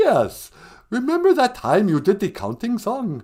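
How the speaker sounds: loud, high vampire voice. Playing a caller to a podcast: the Count voice.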